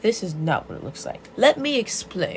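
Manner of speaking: small, pompous, self-important, puffed-up voice. Retelling a story: a man answers an angry woman, little pompous voice. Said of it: "In his little pompous voice".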